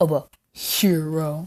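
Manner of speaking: mocking sarcastic tone, "hero" drawn out. Recapping a scene, repeating the police's taunt in a put-on sarcastic way. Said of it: "he says sarcastically".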